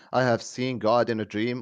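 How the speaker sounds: ordinary delivery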